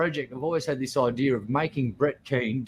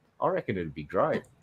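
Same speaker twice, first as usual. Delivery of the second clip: ordinary delivery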